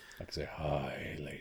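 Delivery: sounding husky. Just over a chest infection, greeting the ladies, husky voice. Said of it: "I sound husky tonight".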